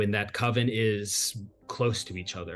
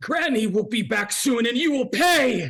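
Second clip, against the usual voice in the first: very high, loud, shrieking hag voice; 8 dB louder than usual. Voicing a foe who screeches at the players in a game, screeching voice. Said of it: "she screeches at you".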